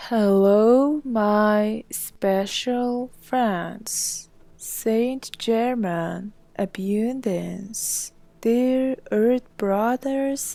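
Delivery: very slow, drawn-out delivery. Opening a message called abundance with a greeting, in a very slow-paced delivery. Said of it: "it's very s- slow paced".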